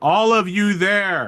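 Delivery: slow, high-pitched bullhorn announcement voice. Voicing an order over a bullhorn to a crowd: orders over a bullhorn. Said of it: "a bullhorn on one of the Aslavs and it's just like".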